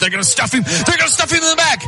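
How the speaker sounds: high, fast, shouted excited play-by-play voice.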